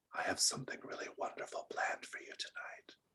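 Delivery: soft whisper, close to the ear. Voicing a character pressed close in a dark hallway: whispering in someone's ear. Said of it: "he's whispering in your ear".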